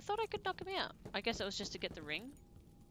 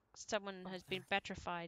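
ordinary delivery

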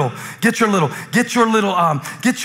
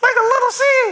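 very high, tiny little voice. Speaking about faith, showing how little the seed is: high-pitched voice. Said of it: "You see how high my voice is?".

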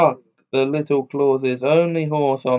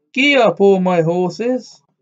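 gleeful, joyful, high happy cry; 6 semitones higher, 4 dB louder than usual. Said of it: "forgot that he ought not to say so and cried".

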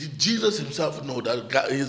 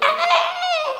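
very high-pitched mock scream. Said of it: "I scream, I go".

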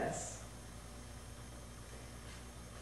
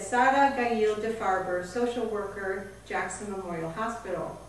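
ordinary talk, nothing marked

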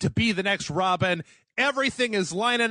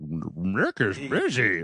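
dog voice, much lower; 12 semitones lower than usual. Retelling what the speaker's dog said when it called, in a dog voice. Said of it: "it sounded more like a dog voice".

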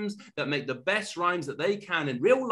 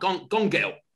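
put-on Cockney, London twang; 3 dB louder than usual. Showing how the other speaker says the title: imitating a cockney accent. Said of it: "one like a sort of Cockney".

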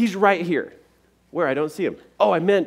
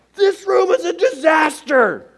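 very high, loud, exploding angry rant; 12 semitones higher, 5 dB louder than usual. Imitating a parent finding one sock on the floor: imitating a parent blowing up. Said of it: "it goes from a good to a kaboom".

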